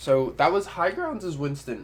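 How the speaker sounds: voice cracking and pitching up mid-line. Wrapping up a recap of a round played as Winston, voice cracking. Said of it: "that voice crack!".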